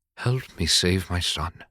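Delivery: gentle, hushed, soft, pleasant whisper. Narrator voicing the leader's line in a story, whispered. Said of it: "the leader whispered".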